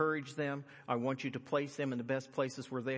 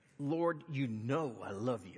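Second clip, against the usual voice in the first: slow, upset, insistent delivery. Retelling Peter answering Jesus a third time, acting Peter upset. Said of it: "Peter just getting upset".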